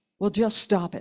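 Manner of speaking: harsh, blunt, curt no-nonsense delivery. Retelling what a voice coach told people: imitating a harsh voice coach. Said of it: "It sounds so harsh".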